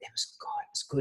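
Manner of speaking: breathy, very quiet, barely-there whisper. Retelling coming back from a silent retreat to a friend: imitating own past whisper. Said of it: "why are you whispering?".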